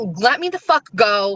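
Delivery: acted angry, swearing-style voice. Retelling being kept from leaving the verdict: retelling an angry outburst. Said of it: "and now I'm mad. Now I'm swearing".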